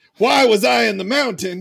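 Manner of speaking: loud, projecting voice. Speaker repeating a question aloud so others hear the other side: speaking loud for all to hear. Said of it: "i will speak loud enough for all to hear".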